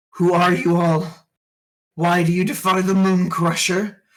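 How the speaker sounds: skull monster creature voice. Voicing a skull creature that looks at a player: skull creature voice. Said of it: "This creature is gonna look in your direction".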